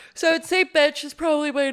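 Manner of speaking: words stretched by a yawn. Naming a favorite brewery on a list, yawning while talking. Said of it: "sorry, I'm yawning".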